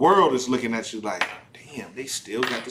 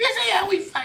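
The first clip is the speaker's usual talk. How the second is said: very high put-on woman's voice. Speaker retells what a woman said, imitating the woman's voice. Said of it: "This is my voice, my impression of her".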